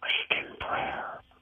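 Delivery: acted whispering. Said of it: "Why are you whispering?".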